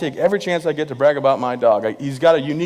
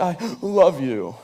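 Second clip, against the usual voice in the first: put-on tearful sob, higher; 3 semitones higher than usual. Retelling a girlfriend's tearful goodbye at the airport: imitating someone crying. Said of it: "crocodile tears just streaming down her face, real heavy cry".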